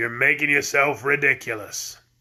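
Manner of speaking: deep, growling, reproachful tone. A narrator reads an unseen speaker's words of rebuke, in a deep growling voice. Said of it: "said a deep growling voice".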